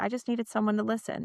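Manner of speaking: usual speaking voice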